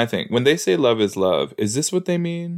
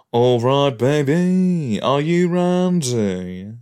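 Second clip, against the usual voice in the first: very slow, drawn-out, playful character voice; 2 semitones higher than usual. Imagining a show character sounding like Austin Powers: Austin Powers voice. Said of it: "I wish he sounded like Austin Powers".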